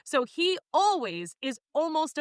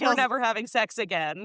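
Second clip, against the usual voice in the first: glum, sad, apologetic, sorry-sounding voice. Retelling a sad character's line after saying he's real sad: imitating a sad character. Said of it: "He's real sad".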